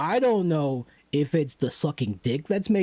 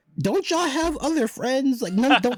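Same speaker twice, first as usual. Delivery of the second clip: very high, incredulous, mocking squeal. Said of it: "And I'm like".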